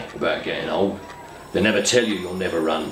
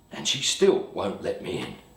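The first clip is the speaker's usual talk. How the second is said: ordinary talk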